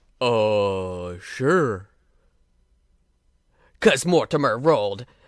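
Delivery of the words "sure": mock booming, thundering giant voice, drawn-out "uh". Retelling what the hill giant said, in a booming giant voice. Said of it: "in a booming voice".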